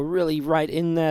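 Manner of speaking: ordinary talk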